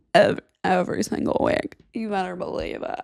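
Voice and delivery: put-on beach-bum surfer dude delivery. Speaking to the audience, in a surfer dude voice. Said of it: "Not sure what surfer dude voice that was".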